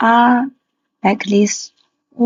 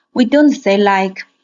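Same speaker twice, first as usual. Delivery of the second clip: usual speaking voice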